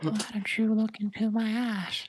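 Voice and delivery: put-on old man voice, pitched very high. Speaking to the group during a game: Herbert from Family Guy voice. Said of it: "Why do you sound like that old man from Family Guy?".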